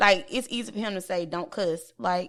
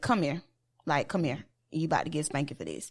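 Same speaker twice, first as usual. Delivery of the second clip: very calm, unbothered, sing-song tone; 4 semitones lower, 4 dB quieter than usual. Speaker retells how he talks to the kids: imitating a very calm voice. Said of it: "Like he will say in the calmest way".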